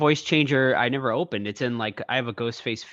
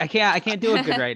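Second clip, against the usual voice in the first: plain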